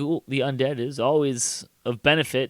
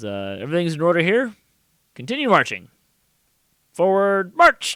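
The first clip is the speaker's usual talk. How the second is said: high, commanding, soldier-like voice; 5 semitones higher, 4 dB louder than usual. Narrating the game, voice the patrol leader ordering his soldiers onward, giving Flaming Fist patrol orders. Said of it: "Coming through the jungle is a patrol of flaming fist soldiers. / He kind of looks around and says, / Coming through the jungle is a patrol of flaming fist soldiers".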